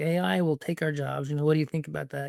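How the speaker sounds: ordinary delivery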